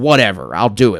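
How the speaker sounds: ordinary talk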